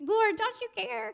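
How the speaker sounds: acted, very high, loud, whiny complaining tone. Retelling a woman complaining to Jesus, in an imagined mock-whiny voice. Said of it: "I'm imagining a whiny voice".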